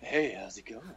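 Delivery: butterscotch-sweet, smooth, easy voice. Quoting a guest's greeting as he came in: imitating John Wallen's butterscotch voice. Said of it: "he sounds like butterscotch".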